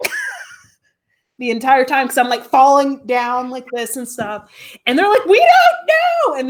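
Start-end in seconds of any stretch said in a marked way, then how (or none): 5.3-6.3 high, loud, slow panicked scream. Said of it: "they're screaming too".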